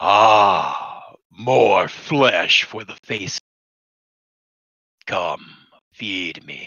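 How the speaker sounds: deep voice with a drawn-out "ah". Describing the voice heard inside your head at the cave, deep voice. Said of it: "you do hear inside your head a deep voice".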